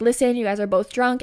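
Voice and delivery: ordinary talk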